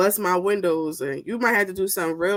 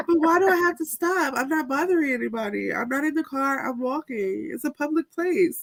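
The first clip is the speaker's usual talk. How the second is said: put-on tipsy, loud voice, somewhat higher pitched; 7 semitones higher than usual. Imagining a friend drunk on the beach answering police: imitating Shauna tipsy and loud. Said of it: "I can just see her right now".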